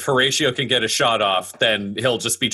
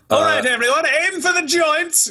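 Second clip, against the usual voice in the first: very high, unfazed, yelled delivery. Voicing a character rallying everyone in a fight against armor, yelling a command. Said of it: "he yells".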